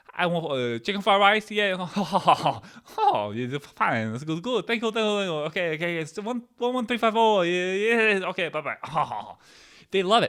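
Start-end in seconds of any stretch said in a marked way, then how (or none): 0.2-8.8 over-the-top put-on Chinese accent, high and slow. Acting out ordering from the chinese food people, in a put-on chinese food accent. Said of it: "I order Chinese from the Chinese food people in a Chinese food accent".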